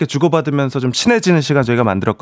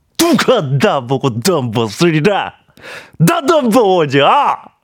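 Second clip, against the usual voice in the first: slow, put-on famous film actor's drawl; 2 semitones higher than usual. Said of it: "오늘 또 모닝으로 또 그 한석규 한번 갈까요?".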